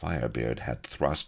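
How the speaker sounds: ordinary delivery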